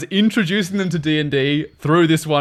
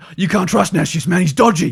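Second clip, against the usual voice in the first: put-on rough, gruff English gangster accent; 4 semitones higher than usual. Retelling what a gangster character said, in a gruff English gangster voice. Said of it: "like an English mob boss, ... really gruff".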